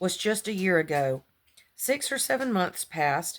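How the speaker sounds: ordinary delivery, nothing marked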